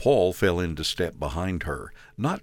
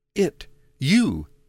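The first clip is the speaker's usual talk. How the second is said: very high, gasping delivery with broken words; 9 semitones higher, 4 dB louder than usual. Lorraine, as Paul leans in to her, gasped. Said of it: "she gasped".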